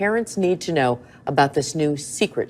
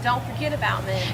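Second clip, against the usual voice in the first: annoyed, angry, very high-pitched complaining tone; 9 semitones higher than usual. Reminding staff not to forget her order: angry tone. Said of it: "hear the tone in that lady's voice? She was angry".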